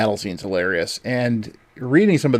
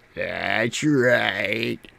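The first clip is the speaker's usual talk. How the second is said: creepy put-on villain voice, quieter; 5 dB quieter than usual. Retelling the movie scene with Sheila, creepy Evil Ash voice. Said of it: "I would do that to her, 'cause it always creeped her out".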